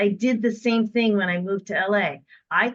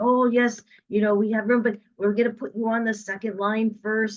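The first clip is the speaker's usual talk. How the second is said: put-on French accent. Speaker retells a phone call with a man, imitating his French accent. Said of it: "in his French accent".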